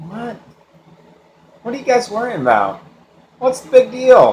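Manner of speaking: very high, groggy, drowsy, half-asleep voice. Retelling the sinking-boat story, imitating Jesus half asleep. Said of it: "I picture Jesus half asleep going".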